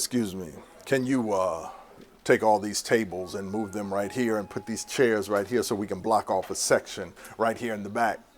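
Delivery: low, soft put-on deep voice of a huge man. Retelling what a huge gentleman asked after walking through the door, in a deep voice. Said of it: "with a deep voice".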